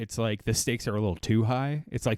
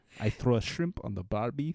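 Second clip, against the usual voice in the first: put-on Russian-accented delivery. Joking about the film, in a russian accent. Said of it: "a more authentic Russian accent".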